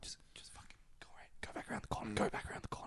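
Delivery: barely-there whisper under the breath, very hushed. Retelling what a friend said to someone nearby, imitating a friend whispering. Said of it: "whispering that".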